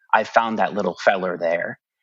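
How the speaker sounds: ordinary talk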